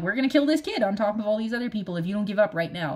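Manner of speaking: usual speaking voice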